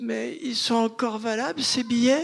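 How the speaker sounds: gentle, small voice. Retelling what an elderly customer asked: imitating a soft little voice. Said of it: "une petite voix douce".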